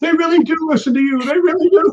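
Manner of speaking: very high, shrieking, screaming outburst. Retelling the brother jumping up after tripping: imitating someone screaming. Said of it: "he starts screaming".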